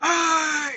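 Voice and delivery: mock held-back yell, very high and drawn out. Retelling calling to two guys on a tailgate: retelling own yell, held back. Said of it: "I'm trying to be quiet right now".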